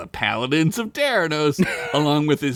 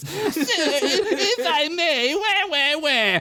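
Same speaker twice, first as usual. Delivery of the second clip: very high, whining, mocking voice; 13 semitones higher than usual. Reading his own written scene, Chad interrupts a superior, whining mocking Chad voice. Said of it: "I wrote whining, mocking voice".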